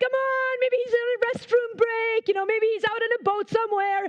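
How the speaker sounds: play-acted, sarcastic, mocking, needling tone. Retelling how Elijah mocked the people dancing around the altar, retelling mocking taunts. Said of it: "he's just like mocking them".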